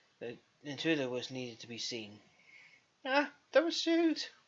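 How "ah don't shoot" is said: very high, loud, squeaky voice. Narrator reads the hidden intruder calling out to Anton; squeaky voice. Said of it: "A squeaky voice was heard".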